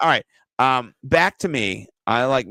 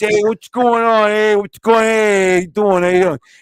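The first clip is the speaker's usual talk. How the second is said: mocking Northeast accent; 9 semitones higher, 7 dB louder than usual. Mocking how people from a nearby Northeast group talk, imitating their accent. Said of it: "why do you talk like this".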